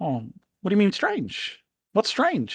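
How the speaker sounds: high little cartoon bird voice. Voicing a bird resting on a shoulder: bird character voice. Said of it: "He's like".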